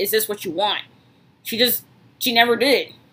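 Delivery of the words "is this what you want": ordinary talk, nothing marked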